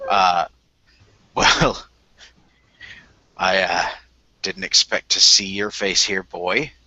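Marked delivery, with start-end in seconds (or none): 1.3-6.7 put-on grizzled, slightly slurred voice, lower. An older gentleman in the ale house greets the boy: grizzled, slightly slurred voice. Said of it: "grizzled, uh, slightly slurred voice".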